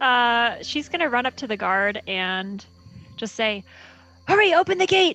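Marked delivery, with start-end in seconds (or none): 4.3-5.2 high, very fast, breakneck words tumbling out. Playing a character rushing up to a gate guard; talking as fast as possible. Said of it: "She's like talking as fast as she can".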